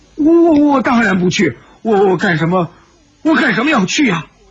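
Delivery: quavering, trembling voice full of fear. Narrator voices a frightened youth refusing to go: trembling, frightened voice. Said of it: "颤声说道".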